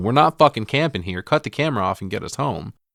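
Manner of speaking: play-acted, half-hearted, mild yell held in. Retelling a film scene where a character starts yelling: imitating someone yelling. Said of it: "He starts yelling".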